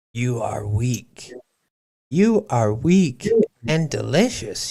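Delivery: hoarse, raspy monster voice. Narrator voicing the beast as it speaks to him, rasping beast voice. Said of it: "he rasped at me".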